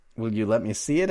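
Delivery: ordinary delivery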